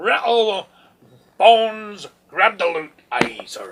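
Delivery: very loud, booming swashbuckling pirate voice. Introducing the next game title, in a pirate voice. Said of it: "I gotta stop talking like a pirate".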